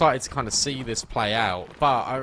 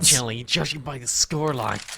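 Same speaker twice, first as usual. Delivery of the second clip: put-on nerdy analyst voice. Casting a joke about an analyst segment: nerd analyst voice. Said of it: "a nerd analyst voice".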